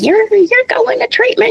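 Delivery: put-on New York accent. Retelling how the in-laws told their son he was going to treatment, New York accent. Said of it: "in their New York accents".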